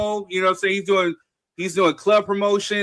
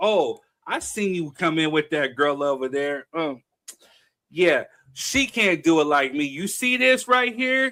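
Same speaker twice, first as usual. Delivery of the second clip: mock flirty, confident seductive tone; 4 semitones lower than usual. Retelling a woman's words to him verbatim: imitating a woman hitting on him. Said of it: "Her conversation to me verbatim was".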